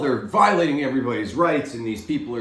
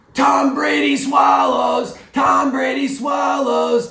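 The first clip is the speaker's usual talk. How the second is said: mock very high, shrill, drawn-out, jeering screamed yell; 14 semitones higher, 5 dB louder than usual. Imagining a fan who screams behind you all game: imitating a fan screaming. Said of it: "sitting there screaming to the back of your head".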